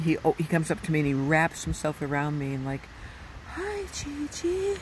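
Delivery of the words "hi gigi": put-on breathy little voice, much higher. Grandma retells how her grandchild greets her, imitating his breathy little voice. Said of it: "in his breathy little voice".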